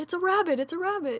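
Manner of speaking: high, insistent mock chorus.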